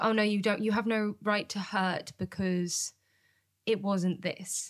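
normal talking voice

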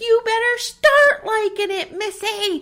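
very high, slow, loud, drawn-out holler. Retelling a scene where a character starts yelling: imitating someone yelling. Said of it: "he starts yelling at Nellie".

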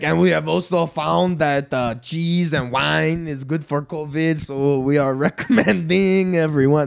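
put-on Quebecois French accent. Speaker mocking a French doctor, voicing him in a Quebecois French accent. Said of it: "that's like a Quebecois French".

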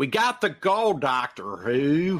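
very slow, put-on American accent. Imitating a British actress doing an American accent: British actor's put-on American accent. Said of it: "she's a British and she's doing an American accent".

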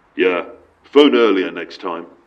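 low, gruff, growling voice. Retelling a phone call, voicing the man hanging up: growling voice. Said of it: "the man growled".

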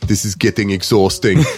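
low, totally deadpan delivery. Pitching lines for a comedic car-fighting sequel: deadpan Terminator voice. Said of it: "Peppered with deadpan, uh, Terminator, like, puns".

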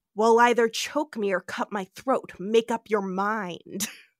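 put-on snarl. Retelling a scene where Khan holds McCoy by the throat, imitating McCoy snarling. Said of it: "McCoy snarls out".

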